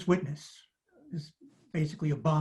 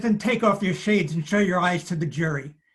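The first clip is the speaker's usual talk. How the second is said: put-on strong heavy Brooklyn accent; 3 semitones higher, 4 dB louder than usual. Retelling a courtroom exchange, one man addressing another, heavy brooklyn accent. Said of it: "in his heavy Brooklyn accent".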